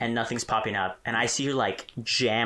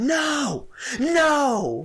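shrill, drawn-out, top-of-the-lungs scream; 6 dB louder than usual. Retelling how she screamed at the dad, retelling a top-of-lungs scream. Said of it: "as loud as she can, to the top of her lungs".

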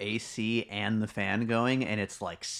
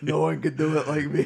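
put-on New York accent, higher and louder; 6 semitones higher, 6 dB louder than usual. Joining in the bit about a Bronze Age chieftain: Donald Trump impression. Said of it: "I would have been like a Bronze Age Donald Trump".

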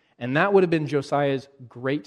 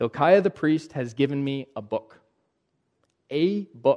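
ordinary talk, nothing marked

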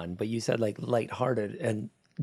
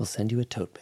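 put-on public radio announcer voice. Thanking a podcast supporter, joking about a tote bag: NPR bit. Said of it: "it's just doing, like, an N P R bit".

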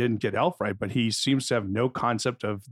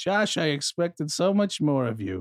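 put-on high-pitched elderly grandmother voice; 4 semitones higher than usual. Quoting a review line as Josh's grandma, put-on grandma voice. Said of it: "just does an impression of my grandma".

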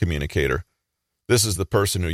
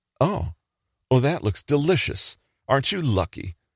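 high-pitched, condescending put-on voice. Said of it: "in a high-pitched, condescending voice".

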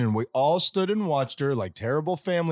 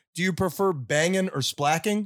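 plain

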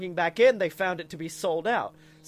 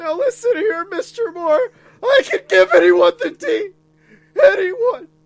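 very high, very loud, shrill voice swooping wildly; 13 semitones higher, 12 dB louder than usual. Doing the Rick impression, talking to Mister Moore: Rick impression. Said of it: "I did do the Rick impression".

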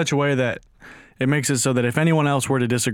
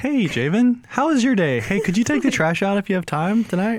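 gentle, sweet, pitched-up, acted voice; 8 semitones higher than usual. Imitating how a partner asks for the trash taken out: imitating a partner's sweet asking voice. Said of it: "she always says it like that".

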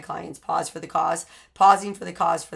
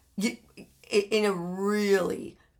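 ordinary talk

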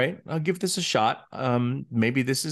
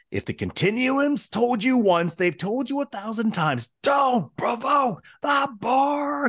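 mock, very high, enraged fatherly yell; 12 semitones higher than usual. Retelling a scene where Q Senior screams at his son: imitating Q Senior screaming. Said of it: "he screams, he goes".

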